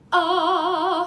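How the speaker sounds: very loud, punched glottal onset on ah. Explaining vocal onsets, demonstrating a hard glottal onset on ah. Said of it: "a glottal onset, which is a really hard punching onset".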